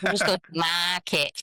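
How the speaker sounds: genuine northern English accent coming through. Showing how the word park sounds when talking to the dog: northern twang on "park". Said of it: "a real northern twang".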